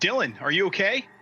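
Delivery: high-pitched call. Playing Billy, calling down to a fallen companion: calling down. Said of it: "Billy's obviously gonna call down".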